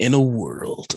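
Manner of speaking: deep, dramatic film trailer announcer voice. Asked to tell more about a game, the speaker switches into a movie trailer voice. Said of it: "I'm gonna do my movie trailer voice".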